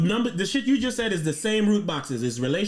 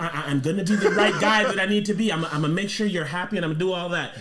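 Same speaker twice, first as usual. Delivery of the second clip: over-sincere, earnest, devoted nice-guy tone; 3 semitones lower than usual. Imitating the kind of guy another speaker sounds like: mock sincere promise. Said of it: "You sound like somebody who's like".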